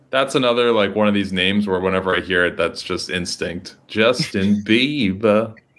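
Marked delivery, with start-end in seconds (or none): 3.9-5.5 clumsy, bad put-on British accent. Saying a name out of pure instinct, in a bad British accent. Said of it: "Why are you saying it like with a bad British accent?".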